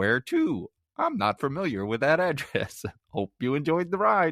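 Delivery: cheerful robot voice. Talking about a movie, the speaker does a Johnny Cab voice. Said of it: "if it sounded like that".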